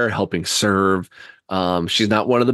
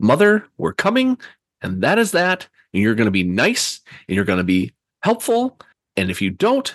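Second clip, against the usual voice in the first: mock, lightly raised voice, swooping; 4 semitones higher than usual. Retelling what a woman said to her mother through a door: slightly raised voice. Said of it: "she kind of like raises her voice a little bit".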